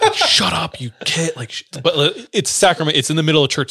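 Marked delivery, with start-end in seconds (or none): 0.1-1.3 mock cross, slow, angry fatherly scolding voice. Retelling a father scolding kids in church: imitating an angry father. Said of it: "My dad would be getting so effing pissed".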